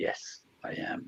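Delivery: slow, soft, calming devil voice in a whisper.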